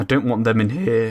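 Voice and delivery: voice breaking badly mid-line. Building a house with torches and a front door, voice cracking. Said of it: "my voice cracked really badly right then".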